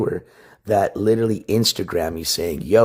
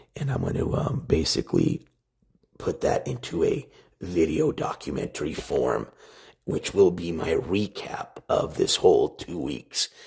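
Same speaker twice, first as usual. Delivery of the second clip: lowered voice, lower pitch; 4 semitones lower, 6 dB quieter than usual. Speaker explains plans for a documentary of their trip, with a lowered voice. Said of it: "let me lower my voice".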